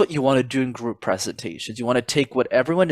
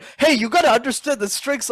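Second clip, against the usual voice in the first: angry, mad-sounding voice, pitched up; 12 semitones higher than usual. Giving feedback on how their own voice used to sound, imitating own past mad voice. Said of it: "you can tell I sound really mad".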